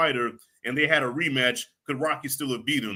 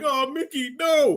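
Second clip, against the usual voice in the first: very high, bawling, blubbering wail; 11 semitones higher than usual. A father recalling watching a film with his kids, imitating his own bawling. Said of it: "As I'm bawling".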